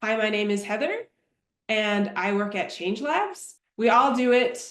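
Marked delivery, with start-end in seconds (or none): 0.0-3.6 rising pitch at each phrase end, including on "Labs". Demonstrating upspeak with a self-introduction: upspeak, rising at phrase ends. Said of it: "Upspeak is".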